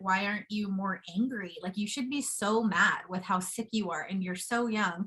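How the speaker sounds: ordinary talk, nothing marked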